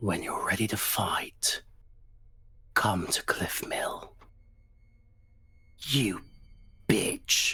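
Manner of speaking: hushed whisper, very close to the ear. A narrator voices Burbage leaning into an unconscious character's ear, Burbage whispering. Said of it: "he whispers".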